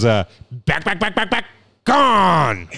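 mock sports announcer voice. Running a call back again for the others, Chris Berman impression. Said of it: "I'll do a voice for you again".

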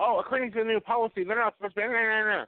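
put-on screaming, ranting woman's voice. Retelling a woman on the campus property confronting them: imitating a woman screaming. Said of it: "woman starts screaming".

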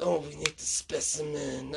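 slow, soft, creepy raspy voice.

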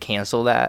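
ordinary talk

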